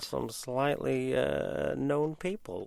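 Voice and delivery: creepy put-on voice. Podcast host teasing upcoming episodes with guests, in a creepy voice. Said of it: "That was creepy. Don't do that voice again".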